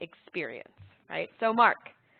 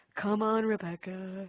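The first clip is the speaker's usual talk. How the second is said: weak, bad put-on cartoon donkey voice; 6 dB quieter than usual. Picturing a character fitness coach cheering someone on: Eeyore voice. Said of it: "Eeyore being like".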